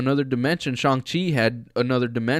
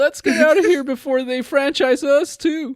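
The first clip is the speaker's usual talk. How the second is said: horrible shrill voice, very high and loud; 13 semitones higher, 6 dB louder than usual. Riffing on a cartoon with co-hosts, the speaker does a horrible Morty impression. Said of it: "pardon my my horrible Morty impression".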